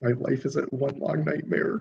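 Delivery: barely audible, hushed whisper under the breath. Voicing an assistant speaking under her breath: whispering. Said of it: "she whispers under my breath".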